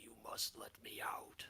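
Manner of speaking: deep gurgling non-human voice. Voicing a trapped being heard in players' minds: deep gurgling non-human voice. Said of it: "deep, uh, non-human voice sounding almost like it's in the water, it's gurgling".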